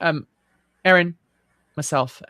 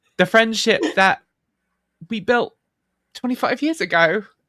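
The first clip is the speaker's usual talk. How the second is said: choked up, tearful, halting, higher, voice breaking; 7 semitones higher, 5 dB louder than usual. Continuing a sentence right after admitting to tears, welling up. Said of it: "I'm welling up".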